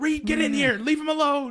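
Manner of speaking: put-on loud, high-pitched hollering voice. Retelling being woken by a kid, quoting his mom down the hall: retelling a mom's yell. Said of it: "I can hear his mom yelling".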